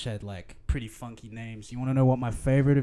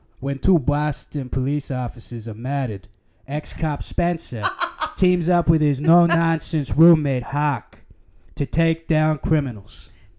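loud, slow, put-on fake Boston accent; 2 semitones higher, 7 dB louder than usual. Asking to read a text aloud, then reading it in a put-on boston accent. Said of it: "can I read it in a Boston accent?".

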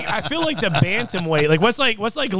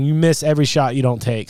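ordinary talk, nothing marked

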